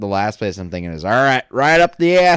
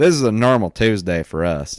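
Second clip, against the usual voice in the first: put-on talking in a Southern accent. Voicing the experienced vets in the story, southern accent. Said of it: "I get a southern accent like when I talk in that voice".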